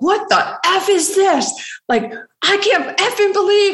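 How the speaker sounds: very high-pitched, furious tirade. Retelling hitting someone with a newspaper: retelling an angry outburst. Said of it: "I went off in front of everybody".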